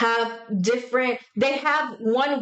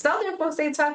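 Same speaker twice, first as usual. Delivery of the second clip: normal talking voice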